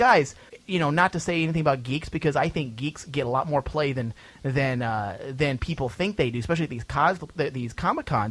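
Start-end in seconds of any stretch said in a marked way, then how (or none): none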